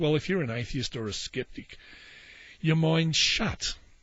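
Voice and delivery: plain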